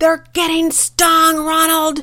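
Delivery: high, loud, angry snapping voice. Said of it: "My mom angrily responding".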